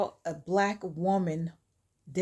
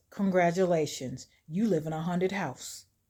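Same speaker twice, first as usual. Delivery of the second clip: snide, sneering, sarcastic, mocking tone; 2 semitones lower than usual. Retelling a plot where a neighbor greets a newcomer: imitating sarcastic delivery. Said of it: "May sarcastically says".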